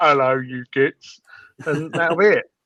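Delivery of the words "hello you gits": put-on dumb orc voice, dim-witted brute. Joking about how a dumb orc on a bike would talk: dumb orc voice. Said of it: "He's just gonna ride around on his bike going".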